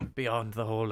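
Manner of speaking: hushed whisper. Voicing a character who leans in close: whispering in character. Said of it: "he leans in and he kinda whispers".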